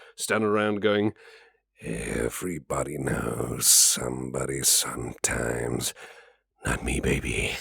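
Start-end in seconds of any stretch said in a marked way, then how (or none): 1.8-7.6 very deep, slow, rough, muttered drawl. Showing off voice-acting shenanigans, a half decent Caleb from Blood impression. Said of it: "a half decent uh, impression of Caleb from Blood".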